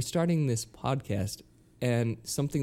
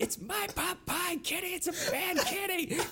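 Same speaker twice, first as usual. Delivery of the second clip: put-on screaming cartoon boy voice, higher; 5 dB quieter than usual. Retelling the sound clip set for the cat feeder: imitating Cartman screaming. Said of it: "I sampled Cartman screaming".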